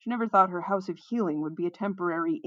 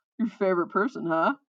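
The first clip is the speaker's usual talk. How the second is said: ordinary delivery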